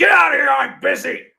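screaming high and loud. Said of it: "he just screamed at her".

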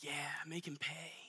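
muttering under breath. Retelling what the speaker said under their breath at the end of a movie. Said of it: "saying under my breath and in my head".

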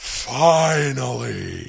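rough, creaky voice, drawn out. Showing the only line that works as The Rock. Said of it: "the only thing I can say as The Rock".

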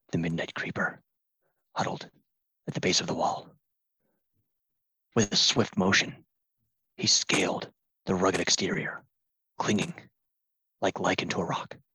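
muttering under his breath. Playing a character who narrates his own climb: muttering under his breath. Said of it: "Under his breath, he's narrating".

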